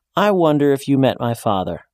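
usual speaking voice

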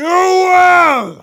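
shrill, very loud, high bellow, "will" stretched. A man cuts off a fallen woman's protest, bellowing. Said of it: "Hugarth bellowed".

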